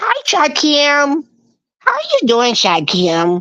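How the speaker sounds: high, swooping sing-song voice. Imitating a coworker whose voice sounds like Edith Bunker. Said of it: "her voice is kinda like Edith Bunker".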